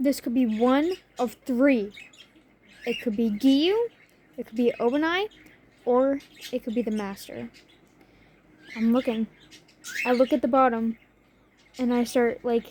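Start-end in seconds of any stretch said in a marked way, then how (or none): none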